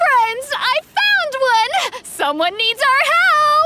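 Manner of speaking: overexcited, too-loud speech. A believer spots a newcomer and calls to fellow followers, loud excited calling. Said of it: "Calm your voice down!".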